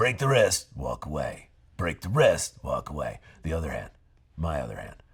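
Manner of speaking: swooping, professional wrestler style voice. Playing a self-defense instructor in a scene: talks like a professional wrestler. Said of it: "he talks like a professional wrestler".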